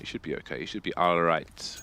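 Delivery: low, soft attempted Jamaican accent. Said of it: "Were you trying to go Jamaican there?".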